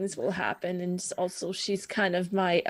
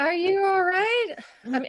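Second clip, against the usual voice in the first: shrill, loud, very high, raised character voice; 12 semitones higher, 6 dB louder than usual. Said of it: "I'm using her old voice".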